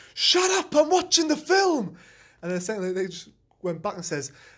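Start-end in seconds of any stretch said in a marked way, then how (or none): 0.2-2.0 very high, enraged, shrill, drawn-out shout. Recounting how someone stood up during the film and yelled; retelling an angry shout. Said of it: "someone got really angry and just stood up and shouted".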